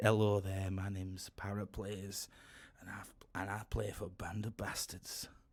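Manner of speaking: put-on strong, laid-on northern British accent. Describing a former YouTuber who always talked like this: Paraplays' northern British accent. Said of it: "very northern British accent. So he always talked like that".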